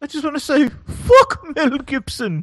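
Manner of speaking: high, slow, drawn-out mock royal voice. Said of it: "heard the Queen saying".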